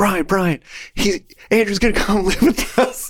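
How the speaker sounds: overjoyed, thrilled, pumped voice pitched very high. Retelling someone's reaction overheard on the phone: imitating pumped excitement. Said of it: "they were pumped".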